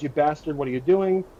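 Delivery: ordinary delivery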